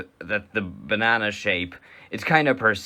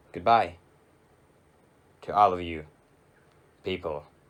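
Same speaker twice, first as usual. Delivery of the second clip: very slow, halting, broken-up phrasing. Signing off to the audience near the end of the showcases, very slow. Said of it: "I said that so slowly".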